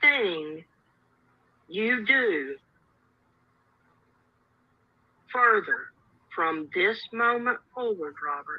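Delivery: threatening, menacing, scary voice. Addressing Robert directly: scary voice. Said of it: "She's using her scary voice".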